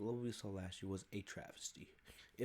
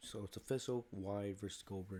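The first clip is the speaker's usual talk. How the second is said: ordinary talk, nothing marked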